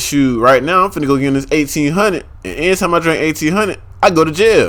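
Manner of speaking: ordinary talk, nothing marked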